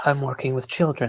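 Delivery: weary, resigned, exasperated muttered aside. Voicing an exasperated character, pinching the nose: said under the breath. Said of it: "I say under my breath".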